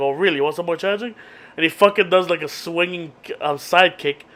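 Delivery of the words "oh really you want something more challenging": stung, pissed-off, angry and offended delivery. Retelling an episode scene where the karate teacher gets pissed off: imitating someone pissed off. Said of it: "So he gets pissed off".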